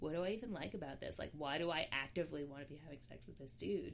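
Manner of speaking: soft, hushed half-whisper, barely above breath. Speaker on a podcast, ashamed, half-whispering. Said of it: "I'm whispering, sorry".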